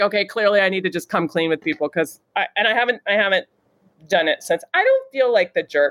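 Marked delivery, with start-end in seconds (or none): none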